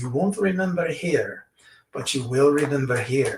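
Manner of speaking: thick, heavy put-on Polish accent. Retelling what a stranger told the speaker: heavy Polish accent. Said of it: "heavy Polish accent".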